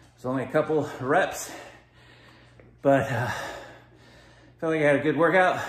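breathless, loud, winded, puffing. Video host finishing the last workout set for viewers, out of breath. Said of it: "I'm really out of breath".

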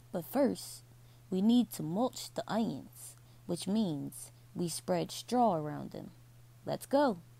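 ordinary delivery

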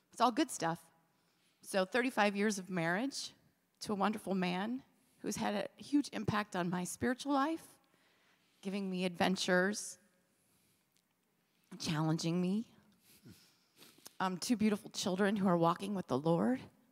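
choking up, teary, holding back tears. Thanking God for her life and trying not to cry, choking up, teary. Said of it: "I'm going to cry".

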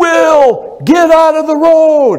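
shrill, high yell, one word stretched long. Acting out a parent at a kitchen window warning a son: yelling a warning. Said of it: "I yell".

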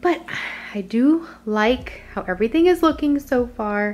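breathless, puffing, out-of-breath, winded talk. Having just run up the basement stairs, speaking out of breath. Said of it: "if I sound like I'm out of breath".

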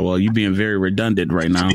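ordinary delivery

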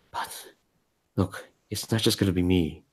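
soft, hushed half-whisper, half under the breath. Voicing Finch, who leans in to the players after thanks: half-whispering. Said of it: "and he kinda whispers".

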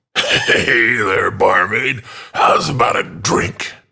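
put-on heavily slurred, drunk-sounding speech. A narrator voicing a drunk man calling to the barmaid, drunk slurring. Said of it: "He slurred".

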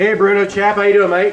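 put-on Australian accent. Greeting a guest named bruno chap, the speaker slips into an australian accent. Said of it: "I don't know why I gave you the Australian accent there".

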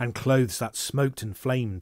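plain reading voice

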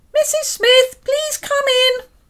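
piercing, shrill, very high, loud, reedy voice. Reading a story aloud, a voice answers a knock at the door, reedy and shrill. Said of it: "a reedy voice shrilled".

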